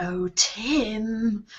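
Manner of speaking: soft, creepy, eerie voice, a name stretched long. A player speaks to Tim before casting a spell, eerie, creepy voice. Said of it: "in this rather eerie, creepy voice".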